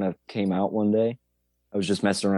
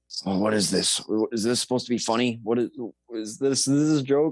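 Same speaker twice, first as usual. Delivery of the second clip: put-on puzzled voice, higher pitch; 3 semitones higher than usual. Retelling how the dad reacts to links on his phone: imitating her dad, puzzled. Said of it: "he's all".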